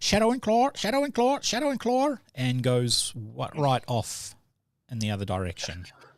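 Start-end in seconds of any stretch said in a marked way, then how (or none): 0.0-2.2 very high, rapid, squawking parrot screech. Telling the group's story, the speaker voices the parrot bolting upstairs: screeching parrot voice.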